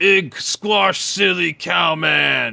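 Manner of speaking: big, slow, booming, rough bellow. Narrator voicing the next character up: booming voice. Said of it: "he has booming voice".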